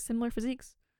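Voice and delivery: quick, offhand throwaway aside. Retelling how a character slips in a remark: imitating a mumble under the breath. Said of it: "He just mumbles it under his breath".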